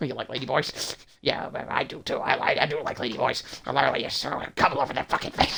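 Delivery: put-on unhinged rant. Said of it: "those little fucking schizophrenic rants that you did".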